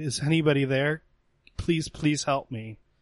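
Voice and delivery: small voice calling out. Voicing an unseen figure in the woods calling out: small voice calling for help. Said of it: "you hear a small voice calling out".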